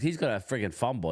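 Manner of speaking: ordinary talk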